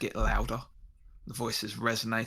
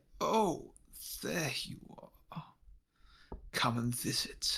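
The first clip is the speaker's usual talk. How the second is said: distorted voice-modulator crackle with echo; 4 semitones higher, 3 dB quieter than usual. Narrator voicing a swaying figure greeting another character: crackling, echoing modulated voice. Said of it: "his voice like modulator change and crackle and echo".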